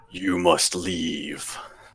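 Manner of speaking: deep, soft, low rumbling voice. As the party is closed in from behind, the narrator voices a deep rumbling voice. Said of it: "you hear just a deep rumbling voice of".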